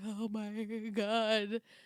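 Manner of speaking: put-on stunned, tearful, baby-like blubbering, put on. Retelling a show scene, a man finds his partner: imitating baby-like blubbering. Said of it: "Like a little baby blubbering".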